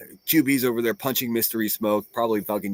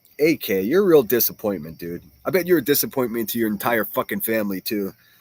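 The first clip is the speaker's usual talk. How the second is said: ordinary talk, nothing marked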